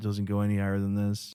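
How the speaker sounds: low put-on monotone, pitch never rising.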